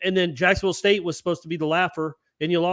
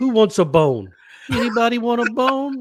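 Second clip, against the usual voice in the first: put-on high-pitched, cooing baby talk; 5 semitones higher, 4 dB louder than usual. Retelling how the speaker talks to their dog, baby talk to a dog. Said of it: "I talked to my dog in kind of baby talk".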